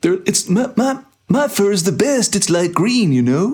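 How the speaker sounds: hippie-type puppet voice. Trying out voices for a Fraggle character, hippie Mokey Fraggle voice. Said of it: "the hippie type of Fraggle".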